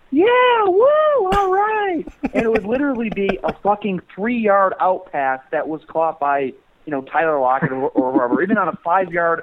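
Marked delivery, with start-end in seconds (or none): 0.1-2.0 mock, very high, loud, drunken whooping fan cheer. Describing annoying drunk fans at a game: imitating fans screaming. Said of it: "they would be screaming".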